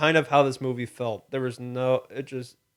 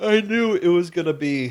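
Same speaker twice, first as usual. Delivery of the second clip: talking through a yawn, pitched up; 5 semitones higher than usual. Discussing a movie's murder plot: yawning while talking. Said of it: "I'm yawning from, from this movie".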